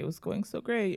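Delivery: mock tearful, put-on weeping voice. Retelling the words of someone sent home from a date: imitating someone in tears. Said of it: "he's just tears".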